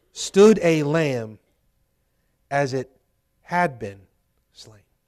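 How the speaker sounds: very slow, deliberate, halting reading broken mid-phrase. A speaker rereads a passage aloud to listeners, reading slowly. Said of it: "Let me read that slowly".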